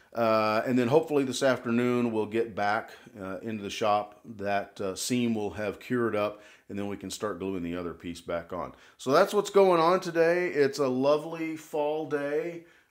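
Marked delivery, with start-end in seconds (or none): 10.4-12.6 slow, heavy, dripping, laid-on-thick sarcasm. Describing the cold gray weather on a live broadcast: heavy sarcasm. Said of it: "I say that with as much sarcasm as I can".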